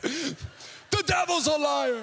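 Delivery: very slow, high-pitched, exasperated, drawn-out cry. Retelling how Rusty reacts to a delayed flight: imitating Rusty yelling. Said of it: "he just yells out".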